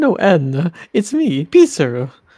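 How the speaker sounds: put-on Italian accent. Reassuring Anna that it's really him: Pizarro's Italian accent. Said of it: "Do I still need to do the Italian voice?".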